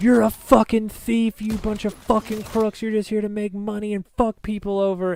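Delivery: mock furious yelling. Retelling yelling at the man who owned the impound lot: retelling an angry yell. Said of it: "I started yelling at this man".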